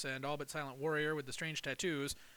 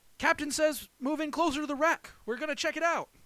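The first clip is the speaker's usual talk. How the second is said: excited yelling, very loud and very high; 12 semitones higher, 9 dB louder than usual. Reading a shipwreck story, the narrator voices a boy running out shouting excitedly. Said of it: "shouting excitedly".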